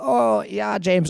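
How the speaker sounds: put-on unconvincing high German accent. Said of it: "I'm doing a terrible German accent".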